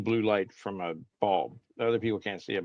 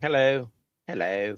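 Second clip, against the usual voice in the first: put-on British accent on both "hellos"; 4 semitones higher, 4 dB louder than usual. Greeting the others on arrival, British accent. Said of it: "I don't know where that British accent came from".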